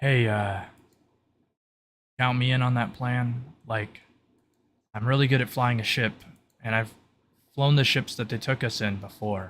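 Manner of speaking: hushed, quiet voice projected forward. Voicing a game character calling out toward others, in a hushed but forward voice. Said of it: "He's trying to be like a hushed but".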